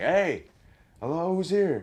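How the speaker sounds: shrill, very loud, high, slow, drawn-out call-out. Retelling going into a room to check for an intruder: imitating own past yell. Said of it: "start yelling".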